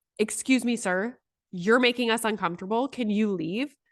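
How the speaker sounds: put-on authoritative, firm tone. Retelling a friend telling a stranger to leave: imitating an authoritative demand. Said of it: "she said it with such authority".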